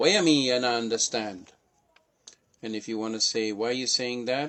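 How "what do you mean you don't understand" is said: put-on Jamaican accent, louder.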